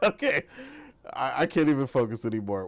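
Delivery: talking through laughter. Trying to move on after something funny: laughing while talking. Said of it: "Let me stop laughing".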